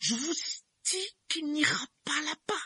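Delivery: very high, sibilant hissing voice. Uncle Vernon, refusing to give up the argument, speaks in a hissing voice. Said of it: "dit-il d'une voix sifflante".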